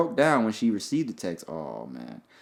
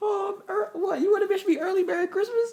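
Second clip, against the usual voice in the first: put-on motherly voice, pitched way up high. Acting out how the other speaker's mom would answer his call: imitating the other speaker's mom. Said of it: "That doesn't even sound like her".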